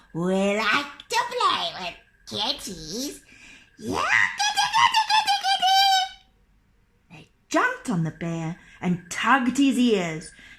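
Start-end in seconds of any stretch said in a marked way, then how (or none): 0.1-5.7 sing-song, pitched-up storybook troll voices calling out. Narrator reading a folk tale, trolls speaking about a bear they think is a cat, trolls' voice.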